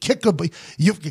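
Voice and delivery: high, loud, furious rant. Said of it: "I was pissed".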